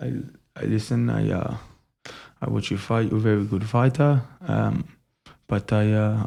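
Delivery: halting, very bad fake Russian accent. Quoting a humble fighter addressing an opponent, in a bad Russian accent. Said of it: "Worst Russian accent ever".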